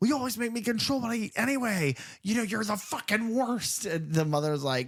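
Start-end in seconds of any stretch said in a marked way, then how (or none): 0.0-3.8 very high, shrill, shrieking outburst. Retelling a movie scene where she yells at her mother: imitating someone screaming. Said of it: "she's screaming at her mother".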